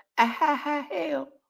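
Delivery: high, soft, mock fake laugh.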